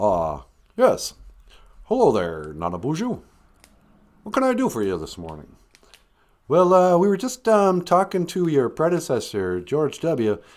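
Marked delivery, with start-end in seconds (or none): 0.8-5.5 low voice, pitch swooping and swinging. Playing a caller patched through on line two in a skit: Barack Obama impression. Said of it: "Mister Obama, welcome to the show".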